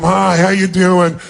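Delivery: slow, bored, dismissive, can't-be-bothered tone. Showing how to greet someone new: greeting as if it's a waste of time. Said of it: "like it's a total waste of your time".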